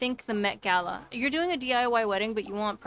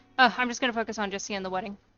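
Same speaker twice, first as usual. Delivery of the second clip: ordinary talk, nothing marked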